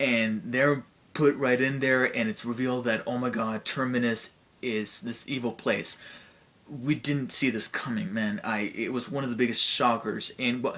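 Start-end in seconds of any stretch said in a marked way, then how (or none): none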